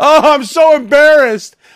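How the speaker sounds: mock shrieky wail, very high-pitched. Telling a dinner story, speaker mocks a woman who kept screaming: mock screaming imitation. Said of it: "she wouldn't stop screaming about it".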